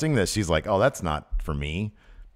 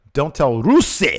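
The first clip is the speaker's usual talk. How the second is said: plain words, one word stressed loud and high; 6 semitones higher, 6 dB louder than usual. Redoing the quote as asked: Lana accent only on the word Rusev. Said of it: "lose the accent except for saying Rusev's name".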